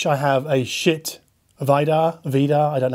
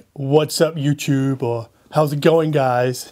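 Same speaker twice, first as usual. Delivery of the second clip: fake American accent, deliberately put on. Presenter opening his video, trying out intro lines in an American YouTuber accent. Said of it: "in an American accent?".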